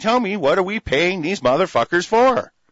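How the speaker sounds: acted-out demanding outcry, held in. Recalling being here last year, the speaker re-enacts what they were shouting. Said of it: "We were shouting".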